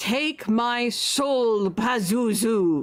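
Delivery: final crying out. A stabbed cultist cries his last words as he dies, screaming. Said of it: "he screams out".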